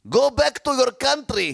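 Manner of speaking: put-on Arabic accent, shouted way up high.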